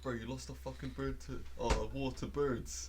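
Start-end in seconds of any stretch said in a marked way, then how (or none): none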